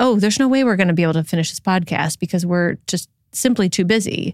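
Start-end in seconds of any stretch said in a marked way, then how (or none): none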